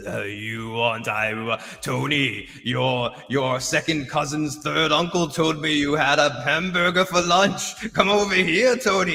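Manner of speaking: slow, demonic, possessed-sounding voice. Retelling the dude in the hospital bed from the last episode: demonic Exorcist-style voice. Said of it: "goes all exorcist".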